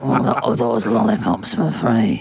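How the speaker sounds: imitated low voice. Asking about free lollipops in a low voice, as Sean Bean. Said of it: "I can't get low enough".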